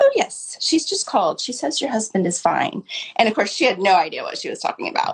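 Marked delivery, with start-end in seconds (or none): 0.0-2.8 put-on, very lovely British accent. Retelling what the woman at the hotel front desk said: imitating a lovely British accent. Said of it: "in her very lovely British accent".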